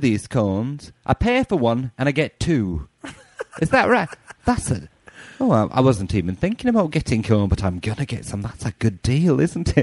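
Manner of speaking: slow, swooping, put-on British accent. Retelling talking to a lady about a cone deal: put-on British accent. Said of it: "I was doing a British accent".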